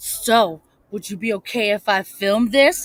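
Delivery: suggestive whisper, stage style. Showing how to ask a partner's permission to film: loud dirty whisper. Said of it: "loudly whisper, like, in her ear".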